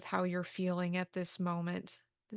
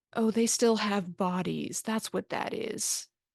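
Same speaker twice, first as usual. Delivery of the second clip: put-on disembodied spirit voice, louder; 4 dB louder than usual. Voicing a second unseen voice that touches the players: disembodied being voice. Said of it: "you hear a second voice saying".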